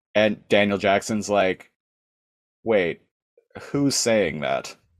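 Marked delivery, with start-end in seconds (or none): 2.6-4.7 suspicious, skeptical, doubting tone. Retelling Daniel Jackson answering Nereus: imitating Daniel Jackson, skeptical. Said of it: "He's just immediately skeptical".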